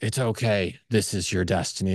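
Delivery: resounding voice. Describing a dark night of the soul when a voice speaks: booming voice. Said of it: "the booming voice says to you".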